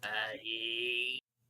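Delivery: slow, low, ominous, droning ghost voice.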